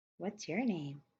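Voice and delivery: light, airy, inviting, engaging voice. Reading a troll girl asking the prisoner in the cell his name: airy, engaging voice. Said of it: "in an airy and engaging voice".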